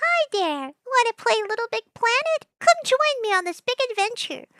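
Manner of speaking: very high, soft, squeaky voice. Speaker imagines a game companion inviting you to play, high soft squeaky voice. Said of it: "This is kind of the voice I think they'd have".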